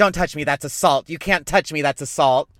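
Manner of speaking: loud shouting. Recounting a woman being escorted out, retelling someone screaming. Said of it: "she started screaming and she's like".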